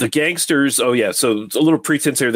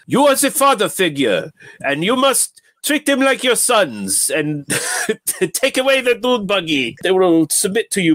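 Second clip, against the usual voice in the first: really bad put-on German accent, pitched up; 8 semitones higher than usual. Imitate the actor dubbing his own lines, in Pleasence's really bad German accent. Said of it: "doing a really bad German accent".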